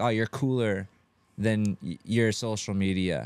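plain

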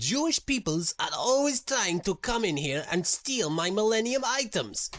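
put-on Eastern European accent. The narrator voices a character in an underground chamber of ancient artifacts: Borat-like accent. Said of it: "that accent is very, Borat".

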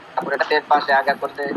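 normal talking voice

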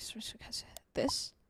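hushed, breathy, nervous whispered okays.

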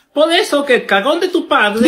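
ordinary talk, nothing marked

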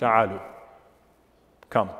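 firm, stern, commanding voice. Narrating how the Prophet answers people mocking the call, retelling a stern command. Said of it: "then in a stern voice".

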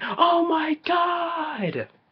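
very high, very slow, drawn-out, over-the-top mock yell. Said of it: "who's being over the top and going".

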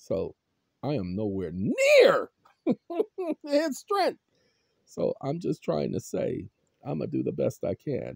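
stressed voice cracking, swooping pitch. You tell people to pay attention while under real stress, your voice cracking from stress. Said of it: "you hear the cracking in my voice right now".

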